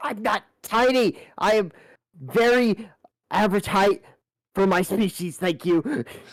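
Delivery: furious yelling. Playing a character called little man twice, in-character angry yelling. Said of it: "I'm gonna start, like, yelling".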